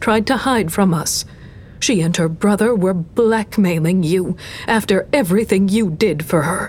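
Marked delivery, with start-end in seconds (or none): none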